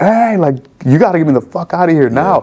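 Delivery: all-out, high, urgent scream. Retelling his own past words after snapping out of a feeling: retelling his own scream. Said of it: "like screaming".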